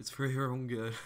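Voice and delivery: ordinary talk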